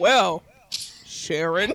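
very slow, drawn-out delivery with gaps between words. Mocking old movie dialogue, [name] talking very slowly. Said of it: "It's so slow".

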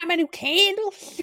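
squeaky, very high cartoon voice. Trying out a high-pitched voice with the group, the speaker does a Toad voice. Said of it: "Now you're Toad".

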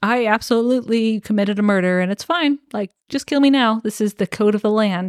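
ordinary delivery

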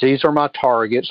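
ordinary delivery

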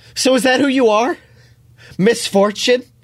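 high, straining yell with a final breath. Narrating a story, reading the guide's line in his final breaths, yelling. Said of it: "The guide yells in his final breaths".

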